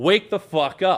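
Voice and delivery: imitated yell, each word stretched like a call. Retelling grabbing the wheel while the driver sleeps: imitating his own yell. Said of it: "And I just yell".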